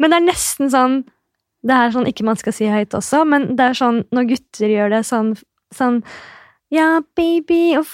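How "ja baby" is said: light, high, pitched-up put-on boy's voice. Imitating boys saying ja baby, in a light high voice. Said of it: "får sånn stemme og lys stemme".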